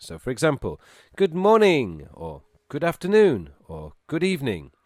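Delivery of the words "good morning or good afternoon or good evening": very positive, bright, upbeat, raised voice. Teaching greetings, giving examples with very positive emphasis. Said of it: "you need to use very positive emphasis".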